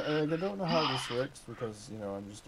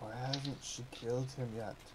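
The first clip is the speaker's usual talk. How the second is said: hushed whisper; 5 dB quieter than usual. In a game scene facing a witch, the character speaks, whispering. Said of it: "I whisper".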